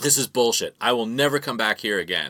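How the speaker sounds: mock furious, angry ranting outburst. Retelling a man storming out of the venue: imitating an angry outburst. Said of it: "he storming out".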